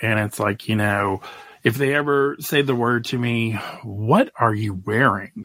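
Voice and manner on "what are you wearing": put-on judgmental tone, slower. Acting out someone questioning the speaker's outfit, in a mock-judgmental tone. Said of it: "In that judgmental tone".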